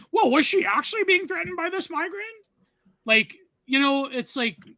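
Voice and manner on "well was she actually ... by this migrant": mocking, very high, rushed well-actually voice. Mocking someone who would equivocate, in the Reddit well-actually voice. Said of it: "do the stupid Reddit well actually voice".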